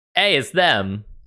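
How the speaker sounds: really bad, fake, botched British accent. Voicing the guy in front of the villagers, really bad british accent. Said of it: "says in a really bad British accent".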